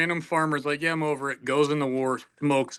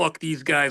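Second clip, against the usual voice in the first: usual speaking voice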